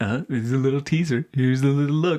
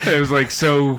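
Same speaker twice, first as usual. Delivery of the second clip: usual speaking voice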